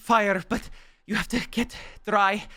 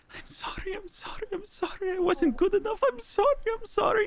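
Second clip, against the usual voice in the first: crying whisper, much higher and slower; 12 semitones higher than usual. Narrator voices a character cradling the listener's character, in a crying whisper. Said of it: "he's crying, just whispering".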